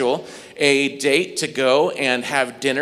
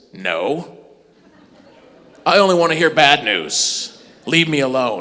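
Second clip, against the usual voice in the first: masked, caped vigilante superhero voice; 3 dB louder than usual. Talking about street evangelism, the speaker acts out someone refusing good news in a Batman voice. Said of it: "That's my Batman voice".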